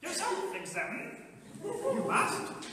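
high, squeezed voice with wide-swinging pitch.

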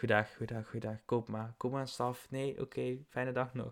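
meek, soft, pitiful little voice. Imitating a shop lady in a Toverland wand shop: imitating a pitiful little shop lady. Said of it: "zo'n zielig mevrouwtje en die zit zo van".

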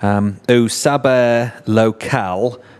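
thick, heavy put-on American accent, laid on. Reading the title of a book for the Brazilians: heavy put-on gringo accent. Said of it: "I like to put on an incredibly gringo accent".

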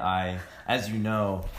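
sarcastic delivery.

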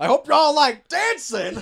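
very high-pitched, drawn-out yell. Retelling a movie scene where a character yells at customers: imitating someone yelling. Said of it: "you're yelling at the customers too".

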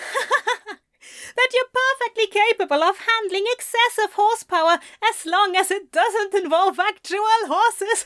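gasping through laughter. Reading a story, Pepper answers Crowley across the bar, gasping out through laughter. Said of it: "and Crowley looked up to see her looking his way as she gasped for breath. / She gasped out around her laughter".

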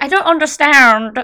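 badly done Australian accent. Quoting a stand-up special to a friend: bad Hannah Gadsby Australian accent. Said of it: "I can't do an Australian accent".

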